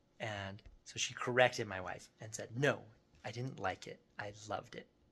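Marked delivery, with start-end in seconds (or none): 2.6-4.9 put-on super sassy little girl voice. Retelling his three-year-old correcting his wife; imitating a super sassy voice. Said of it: "Like in like a super sassy voice".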